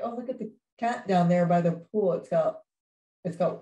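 ordinary talk, nothing marked

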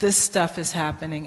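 ordinary delivery

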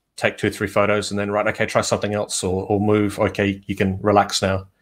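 ordinary talk

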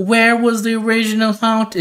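imitated Southern accent. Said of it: "a very specific, like, Southern accent".

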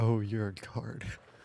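mock disgusted tone. Repeating how a guard said a line to them, mock-disgusted. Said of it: "Sound like he said it with such disgust".

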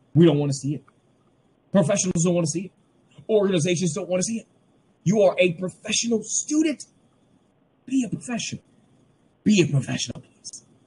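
getting carried away. Telling students not to use unprofessional email addresses, getting carried away. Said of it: "Sorry, y'all. I had a moment".

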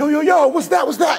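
acted, very high, freaked-out, panicked babble. Retelling the disciples seeing a figure approach the boat: imitating them freaking out. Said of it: "And they're freaking out".

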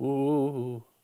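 spooky, ghostly 'ooh' sound. Talking about hauntings, imitating a ghost with a ghostly 'ooh' sound. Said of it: "That was my impression of a ghost".

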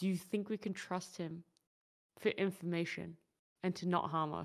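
soft, hushed half-whisper in character voice. Half-whispering in character to a companion about trusting a stranger: half-whispering in character. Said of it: "I whisper to Ramleth, and I go".

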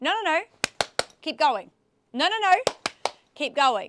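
quick, sharp, firm, annoyed, assertive tone. Demonstrating the command to keep going, sharp and assertive. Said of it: "You say very sharply and assertively".

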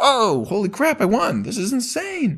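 mock thrilled, very high and drawn out. Retelling a movie plot, quoting the character winning: imitating an excited character. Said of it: "he's so excited".

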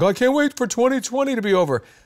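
high mock screaming. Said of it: "everybody's screaming".

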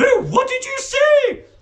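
very high, very loud, shrill demanding voice. A history teacher, just insulted by a pupil, demands an answer. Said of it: "Demanded Miss Midge".

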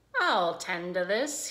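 speaking with a chuckle. Templeton, about to bite Wilbur's tail, speaks chuckling. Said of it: "he chuckled".

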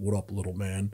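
low, deep, easy-going voice. Retelling being greeted from behind while playing basketball: deep Shaq voice. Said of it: "I heard this deep voice behind me and said".

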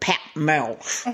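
put-on bad East End accent. Retelling a story, the speaker imitates Patina Miller's bad East End accent. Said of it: "She'd go".

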